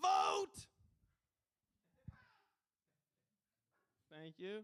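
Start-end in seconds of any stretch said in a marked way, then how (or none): 0.0-0.7 shrill, very high, very loud screech. Speaker does impressions he is working on for listeners; Gilbert Gottfried impression. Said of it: "Gilbert Gottfried if he was a social justice warrior".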